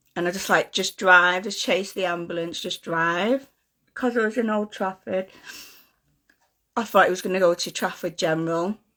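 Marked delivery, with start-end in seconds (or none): none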